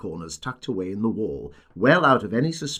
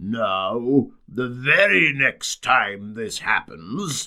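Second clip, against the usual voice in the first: gruff, wary, suspicious, Now drawn out; 3 dB louder than usual. A narrator reads a voice behind a door opened a few inches, gruff and suspicious. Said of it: "said a gruff and suspicious voice".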